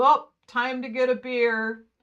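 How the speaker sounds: very loud, showy, drawn-out, grand delivery. Retelling a stand-up set, imitating a heckler's big announcement. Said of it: "he stood up and made this big".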